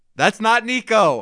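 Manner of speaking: shrill, very loud, upset outburst blurted out instantly. Recalling the other speaker's reaction at a show, mock-upset loud protest. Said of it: "very loudly right away".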